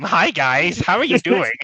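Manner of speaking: mocking parody way of talking. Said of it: "I should just talk like this every stream".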